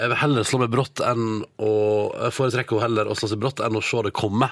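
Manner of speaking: normal talking voice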